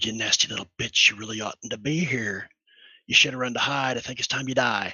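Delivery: whispering menacingly. Whispering in an enemy's ear before casting a spell: whispering menacingly. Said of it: "And I'm gonna whisper".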